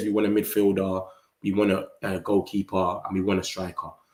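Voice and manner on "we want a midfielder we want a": usual speaking voice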